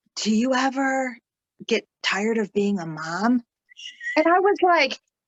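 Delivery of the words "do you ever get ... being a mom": put-on whispering voice. Retelling how a new mom in therapy leaned in: imitating a client whispering. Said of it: "leans forward and she whispers to me".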